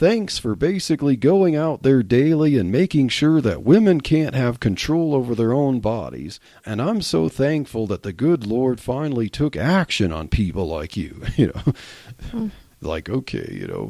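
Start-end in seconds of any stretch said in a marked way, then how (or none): none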